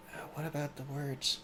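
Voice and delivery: hushed, very quiet, barely audible whisper. Voicing a character who leans closer to another: whispering very quietly. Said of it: "whispers to him very quietly".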